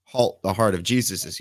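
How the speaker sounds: normal talking voice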